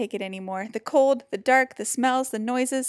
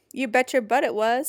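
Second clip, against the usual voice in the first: plain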